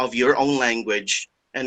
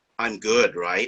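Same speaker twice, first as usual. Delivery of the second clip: arrogant, proud, self-satisfied, bragging tone. Retelling what a student said proudly at the end of a recipe explanation: imitating someone saying proudly. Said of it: "she said proudly".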